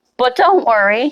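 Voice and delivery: sarcastic, mock reassuring tone. Telling the LGBTQ plus community not to worry: sarcastic. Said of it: "and I say this sarcastically".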